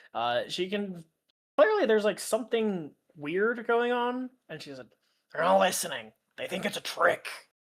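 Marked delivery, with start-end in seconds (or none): 5.3-7.2 harsh, horrible, crackling creature-like alien speech. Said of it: "that horrible grackling speech".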